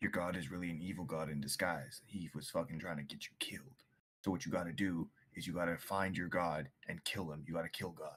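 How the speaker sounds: whispering. Leaning in real close to another character in the game: whispering. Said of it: "Are you whispering that?".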